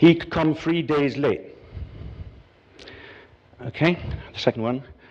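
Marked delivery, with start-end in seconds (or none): 0.0-1.4 Estuary English London accent. Repeating an example sentence in the kind of accent heard earlier. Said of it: "the kind of accent that we heard".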